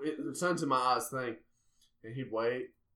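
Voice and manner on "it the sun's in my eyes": plain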